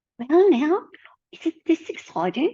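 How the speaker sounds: failed British grandma accent, high, swooping. Trying out a calming grandma who speaks with a british accent, failed soft british grandma accent. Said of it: "I can't even do it right".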